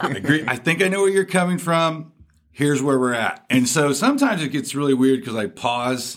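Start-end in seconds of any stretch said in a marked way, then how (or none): 0.0-3.4 yelling in a higher voice. Retelling talking back to a debate podcast: imitating own yelling at radio. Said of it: "yelling at my radio".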